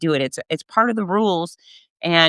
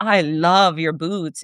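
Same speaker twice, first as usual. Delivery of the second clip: slow, very sophisticated, refined tone. Retelling a first-class passenger's compliment on boots: imitating a sophisticated tone. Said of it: "in a real sophisticated way".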